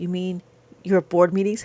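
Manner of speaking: soft, quiet half-whispered delivery. Imitating a lady with stickers who always half-whispers: imitating someone half-whispering. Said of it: "She whispers".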